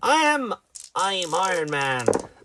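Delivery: heroic-sounding pirate voice. Host does a promised impression of a famous movie character: Iron Man impression. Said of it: "Sounded like a pirate being Iron Man".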